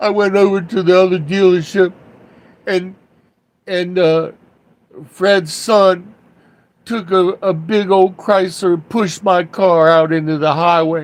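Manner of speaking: mock crying like a little child, sniffling and sobbing. Retelling what a crying boss said after a car incident: imitating someone crying. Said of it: "he's sniffling and crying like a little child".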